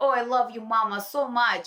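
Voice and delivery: put-on little child's voice with Russian accent. A mother retells how her child used to talk, imitating Charlie's Russian accent. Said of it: "Charlie had a Russian accent".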